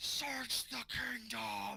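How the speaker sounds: loud, slow, high-pitched bellowing giant's yell. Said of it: "yells out in giant".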